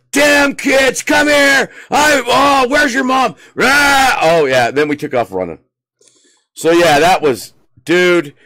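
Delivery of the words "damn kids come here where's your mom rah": mock very high-pitched, slow, drawn-out hollering. Retelling how a man yelled at the giggling kids, imitating him yelling. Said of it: "he started yelling at us".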